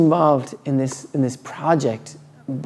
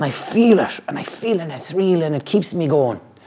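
pirate-style delivery. Retelling what the old man next door said: imitating a neighbour as a pirate. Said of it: "I made him sound like a pirate".

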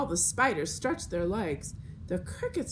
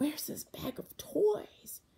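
hushed, high-pitched whisper; 7 semitones higher, 4 dB quieter than usual. Watching a newcomer arrive, one onlooker asks the others: whispered. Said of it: "whispered Jose".

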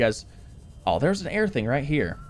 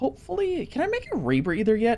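very high, cracking, breaking voice; 9 semitones higher than usual. Wrapping up a game episode for viewers, the speaker's voice cracks. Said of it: "I feel like my voice just cracked".

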